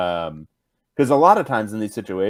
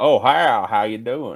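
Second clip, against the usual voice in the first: hearty, big country goon voice; 4 semitones higher, 3 dB louder than usual. Describing how a man he knew talks, making fun, big country goon voice. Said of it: "he talks like a big country vo- goon".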